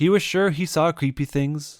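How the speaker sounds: ordinary delivery, nothing marked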